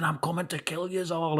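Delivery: play-acted shouty, high-pitched, mild half-yell. Retelling being pushed down the street still threatening: imitating own past shouting. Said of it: "I was shouting".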